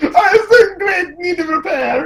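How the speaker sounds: put-on very high-pitched voice with an Italian accent. Answering a question about the plumbing: Italian Luigi voice. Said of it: "your Italian Luigi impression just kind of echoes".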